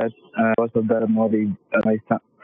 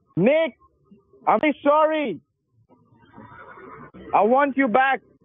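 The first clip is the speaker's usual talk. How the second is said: shouting as loud as possible, pitched higher. Performing an apology line after being asked to yell: yelling as loud as possible. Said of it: "Just let it out. Yell".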